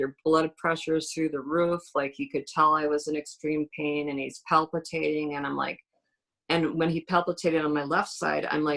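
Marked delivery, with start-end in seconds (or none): none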